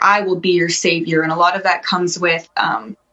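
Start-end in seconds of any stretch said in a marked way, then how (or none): none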